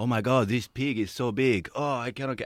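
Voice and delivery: put-on Spanish accent in English. Retelling an AI-translated video clip, imitating a Spanish accent. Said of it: "he was going like in a Spanish voice".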